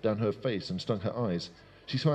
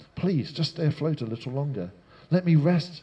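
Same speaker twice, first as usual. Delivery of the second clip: high-pitched, begging, imploring, pleading tone; 6 semitones higher, 4 dB louder than usual. Sinking in a lake and too tired to swim, she pleads. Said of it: "she pleaded".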